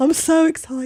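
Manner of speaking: mock giddy excitement. Imitating a train enthusiast who gets so pumped: imitating someone getting pumped. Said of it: "He gets so pumped".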